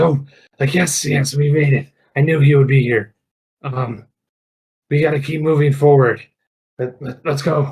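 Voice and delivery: loud, eager, all excited exclaiming. Voicing a character who spots the distant wizard at last: excited. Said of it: "gets all excited".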